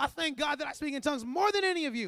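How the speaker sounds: smug bragging, very loud. Retelling what Paul said about himself, mock-boastful Paul. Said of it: "Paul was sometimes real boastful".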